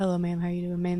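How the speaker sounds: put-on mutter under the breath. Retelling what a man said: imitating someone muttering under his breath. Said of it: "under his breath".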